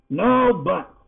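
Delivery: irritated, cutting snap. Reading a story, voicing a character who cuts off another's protest: snapped. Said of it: "Yarif snapped, lashing his tail in irritation".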